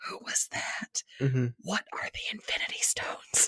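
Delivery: whispered, very quiet. Speaker, not a comic reader, shows the questions they ask at movie stingers: retelling a whisper. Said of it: "I have to whisper".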